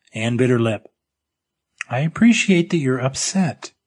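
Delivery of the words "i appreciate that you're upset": cautious, careful, measured delivery, each word chosen. A woman answers an upset speaker's outburst: speaking carefully. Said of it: "she said carefully".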